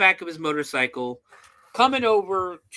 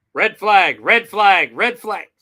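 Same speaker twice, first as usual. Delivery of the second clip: ordinary delivery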